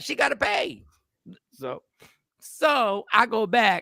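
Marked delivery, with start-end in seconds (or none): 0.0-0.8 curt, blunt, raised-pitch delivery. Repeating what the supervisor said, imitating a blunt supervisor. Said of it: "she was very blunt. ... She just said it like that".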